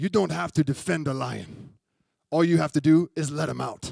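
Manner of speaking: put-on English with a German accent. Quote Reinhard Bonnke from an interview you watched, in Reinhard Bonnke's German accent. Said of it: "in his German accent".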